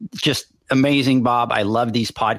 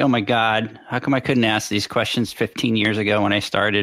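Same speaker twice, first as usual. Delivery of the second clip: normal talking voice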